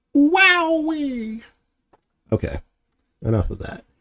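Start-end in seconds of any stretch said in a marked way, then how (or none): 0.1-1.4 very high, drawn-out put-on cartoon voice. Showing that the voice should be higher, the speaker does it in a high-pitched cartoon voice. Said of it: "gotta be a little bit more high pitched like this".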